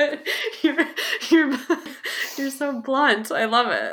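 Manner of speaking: talking through laughter. Reacting to the other speaker's blunt remark, laughing while talking. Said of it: "I'm sorry for laughing".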